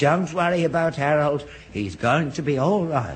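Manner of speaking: normal talking voice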